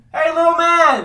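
put-on drunk-sounding man hollering, rowdy, calling out.

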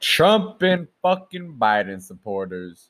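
slow, pointed stress on fucking and following name. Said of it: "Why do you say it like that?".

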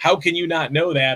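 normal talking voice

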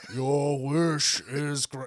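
reluctant, makeshift attempt at a character voice. Retelling a scene after a co-host asks for the Shenron voice. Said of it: "Do the Shenron voice".

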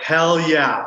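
thrilled, excited, eager voice. Retelling an agent's offer of a music video part: retelling own excited reply. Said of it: "I was so excited".

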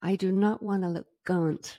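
put-on, practiced American accent. On your podcast, show the accent you have been practicing: a practiced american accent. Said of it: "I've been practicing my American accent".

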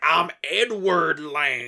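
bad, slow, exaggerated Southern drawl.

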